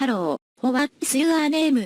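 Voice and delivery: fake robotic computer voice. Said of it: "In her computerized voice".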